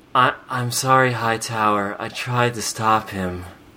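drowsy drugged-sounding voice. Quoting a cartoon character's line, imitating a drowsy Jennifer Hale voice. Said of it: "she sounds like she's been taking a lot of sleeping pills".

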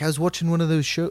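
put-on, poorly done Scottish accent. Retelling what a friend said about a DNA show: imitating Mitch in a bad Scottish accent. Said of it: "it was in a Scottish accent".

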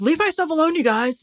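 very high shouting. Retelling an inspector yelling from inside his tent: imitating someone yelling. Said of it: "yelling at them from inside his tent".

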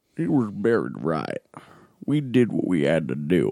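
weird, swooping movie-star voice. Summing up the film's dialogue: Tom Hardy impression. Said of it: "Tom Hardy going".

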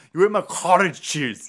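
loud, high, heavy put-on thick Croatian accent. Quoting the roommate character from the movie, imitating the roommate's thick accent. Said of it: "He has a really thick accent".

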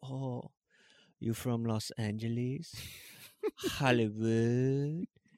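put-on dainty-sounding man's voice. Retelling a man asking where the speaker is from, imitating his dainty voice. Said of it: "He made him kinda sound like Tommy Wiseau".

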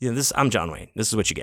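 ordinary talk

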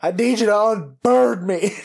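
put-on sudden outburst, loud, high, drawn-out. Retelling walking past a digital poster and gasping, reenacting own loud blurt. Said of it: "I just really loudly went".

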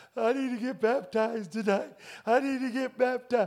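play-acted, desperate, tearful weeping. Retelling a phone call to parents at church: imitating own past crying. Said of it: "I'm crying".

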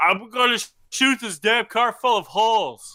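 mock shrill, furious yelling, pitched way up. Describing a movie scene where people yell at each other, retelling an angry yell. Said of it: "people are actually yelling at each other".

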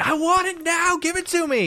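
play-acted, very high, shrieking, excited fan scream. Retelling the crowd at a software announcement: imitating crowd screaming. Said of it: "people in the crowd screaming".

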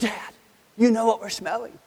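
loud, high-pitched, carrying stage whisper. A father retells his son speaking to him at the dinner table, in a loud whisper. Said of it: "in a loud whisper".

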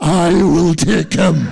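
very loud, fierce, booming, low, menacing growl. A woman settles an argument over who takes the injured man to hospital, fierce growl. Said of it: "in a voice that would scare the fucking devil himself, growled".

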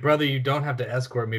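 plain

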